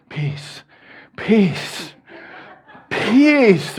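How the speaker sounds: coaxing whisper. Retelling pushing a stubborn shopping cart down the aisle, retelling a whisper. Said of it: "I'm whispering".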